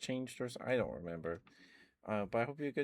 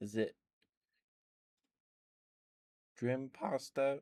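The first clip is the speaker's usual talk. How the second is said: cracked, breaking voice; 2 semitones higher than usual. Greeting viewers on a stream, the streamer reads out a name, voice cracking. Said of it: "Sorry, voice cracked".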